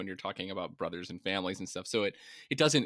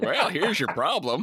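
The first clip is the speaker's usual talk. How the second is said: put-on folksy Southern drawl, high and loud; 8 semitones higher, 7 dB louder than usual. Imagining an engineering guy who comes in to fix things: put-on Southern accent. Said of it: "some engineering guy with a Southern accent come in and be like".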